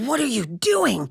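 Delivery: creaky, eerie, weird, creepy voice. Retelling what mom asked the speaker: imitating mom's weird voice. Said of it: "They actually get a weird voice".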